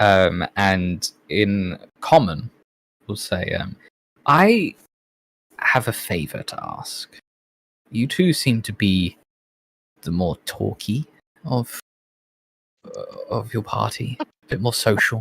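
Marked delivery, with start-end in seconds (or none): 4.3-15.2 sly, confiding, conspiratorial tone. A character leans down to ask two party members a favor, leaning in conspiratorially. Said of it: "leans down a little conspiratorially".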